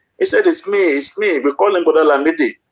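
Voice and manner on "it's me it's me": weeping, tearful voice, crooked and wavering. Retelling an uncle calling out from hell: imitating someone weeping. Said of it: "this man has been weeping".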